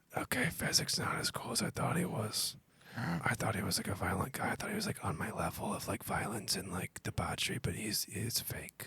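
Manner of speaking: soft, close, private whisper. Playing a character whispering to another about Fezzik: whispering quietly. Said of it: "I whisper quietly in his ears".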